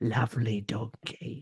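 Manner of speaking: creepy, upsetting puppet-show voice. Doing a Tots TV puppet's line after calling Tom's voice creepiest: imitating Tom from Tots TV. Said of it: "you're very good at his voice".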